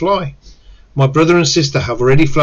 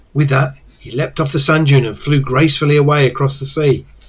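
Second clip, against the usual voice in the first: ordinary delivery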